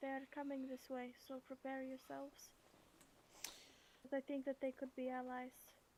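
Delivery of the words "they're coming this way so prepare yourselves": whispering, slower. Player's character warns the others they're coming this way, whispering. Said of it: "I whisper".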